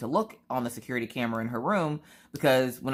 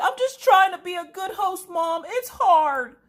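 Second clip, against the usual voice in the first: put-on very high, very loud shout, close to tears; 6 dB louder than usual. Mother retells her daughter's outburst, imitating Maggie's tearful yell. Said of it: "she's yelling it and trying not to cry".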